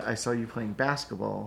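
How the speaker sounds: usual speaking voice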